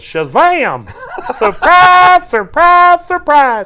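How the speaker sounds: very high, loud, slow, drawn-out goofy Southern holler. Showing off the voices he can do, in a Gomer Pyle voice. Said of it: "Southern comedy voice".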